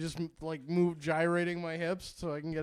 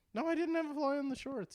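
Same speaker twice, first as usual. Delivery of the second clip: weird, very high-pitched, defensive voice; 10 semitones higher than usual. Denying a story another speaker tells, in a weird defensive tone. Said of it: "Why'd you say it in that kind of weird tone?".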